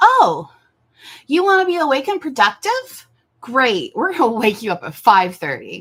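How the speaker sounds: high, loud, mock-cheery voice.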